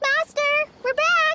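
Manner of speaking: shouting, yelling. Calling out to Master on arriving back: shouting. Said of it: "You don't have to shout".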